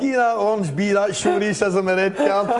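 high-pitched, laughing through the words.

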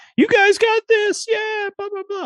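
very high, loud, hype-man style cheering. Describing Toad as a hype man who cheers everyone on: Toad as a hype man. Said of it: "or he's just like".

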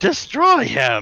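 put-on petulant childish tantrum voice. Retelling a cartoon scene, voicing Terrorsaur angry like a child.

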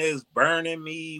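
sudden play-acted screaming outburst breaking out. Picturing someone getting burned and imitating them: imitating someone screaming. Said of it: "She starts screaming".

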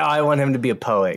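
plain

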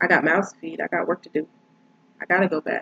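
ordinary talk

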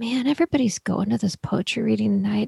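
muttering to himself.

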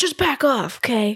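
mock, sharp, snapping tone. Retelling how a magician snapped during an audition: imitating someone snapping. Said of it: "snaps at her".

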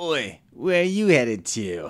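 put-on booming, loud, swooping Australian mobster accent. Narrating a game scene, the speaker voices a goblin stopping someone, in an Australian mafia accent. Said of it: "Heard the Australian mafia accent though".

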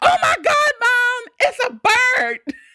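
shrill, loud shriek, pitched way up. Retelling seeing a bird and calling out to mom: retelling a scream. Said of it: "I screamed and I'm like".

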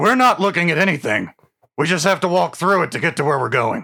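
gruff dwarf fighter character voice. Playing a one-armed dwarf fighter in a role-playing game, gruff Drillheart voice. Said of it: "[name] Drillheart, a gruff, one-armed mountain dwarf fighter".

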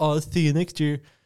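high-pitched, heavy, weary, dripping sarcasm. Mocking people who joke about next year: imitating people sarcastically. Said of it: "I was being really sarcastic".

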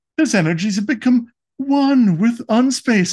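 very high-pitched robot villain voice. Recapping a show where Pacac gets destroyed, Megatron voice. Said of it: "I don't know why I'm talking like Galavar".

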